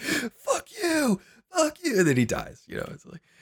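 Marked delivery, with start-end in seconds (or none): 0.0-2.0 acted, very high, very slow, drawn-out screaming. Retelling a guy in the back screaming at him, imitating someone screaming. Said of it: "just constantly screaming".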